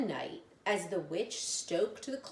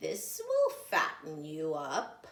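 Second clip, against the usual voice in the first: sly, crafty scheming voice with swooping pitch. Reading a story aloud, an old lady's line: sly, scheming tone. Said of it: "she said slyly. ... Maybe you could tell from the tone of my voice".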